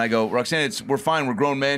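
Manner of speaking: ordinary talk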